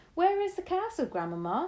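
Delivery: very high, impatient outcry. A grandchild cries out impatiently to a grandmother. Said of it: "I cried impatiently".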